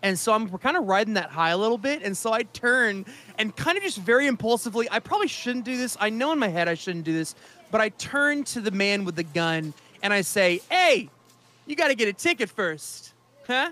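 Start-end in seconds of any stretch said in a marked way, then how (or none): 10.7-13.7 put-on light touch of Italian accent. Saying a line to the man with the gun: slight Italian accent. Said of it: "in a little bit of an Italian accent".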